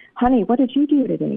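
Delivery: worried voice. A wife retells her husband coming home from work, mock-concerned. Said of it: "he'd say with a concerned voice".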